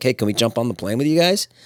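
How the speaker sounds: joking, casual, lighthearted, half-serious tone. Retelling a joking request to a lady about her plane: retelling a joking request.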